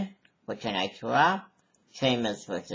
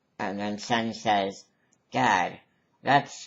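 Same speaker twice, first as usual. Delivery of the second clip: usual speaking voice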